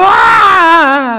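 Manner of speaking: put-on high, loud scream like a child's.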